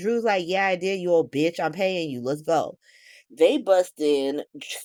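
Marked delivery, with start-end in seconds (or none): none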